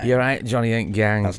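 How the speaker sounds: put-on Manchester accent. Asked to greet johnny and the gang in a manchester accent. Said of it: "Just do hi Johnny and the gang in a Manc accent".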